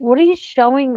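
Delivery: mock irritated, fed-up, exasperated, pissed-off tone. Retelling snapping at a helper over the meat cubes: retelling own pissed-off question. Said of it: "'cause I got really pissed off with her".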